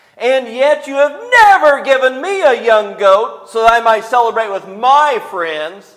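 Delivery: very loud, high-pitched, snivelling whiny voice. Reading aloud a man's complaint, in a whiny voice. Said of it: "his voice gets kind of whiny".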